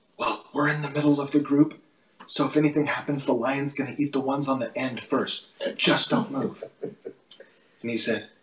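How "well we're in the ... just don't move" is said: imitated whisper. Retelling an answer to a friend who heard a mountain lion: retelling a whisper. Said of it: "I whisper back to him".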